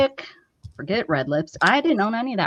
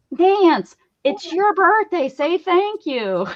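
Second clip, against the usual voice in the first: very high, slow, drawn-out yell; 10 semitones higher than usual. Retelling an aunt prompting grandma on the phone: imitating an aunt screaming. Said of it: "I hear my aunt screaming".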